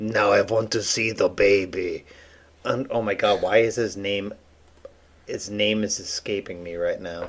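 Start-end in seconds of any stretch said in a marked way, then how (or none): 0.0-2.1 put-on, odd-sounding European-accented voice. Recalling a Mandalorian character: Werner Herzog impression. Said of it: "the dude who's like".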